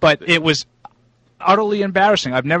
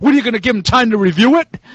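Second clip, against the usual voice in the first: sarcastic scream, high-pitched and loud. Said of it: "he's screaming".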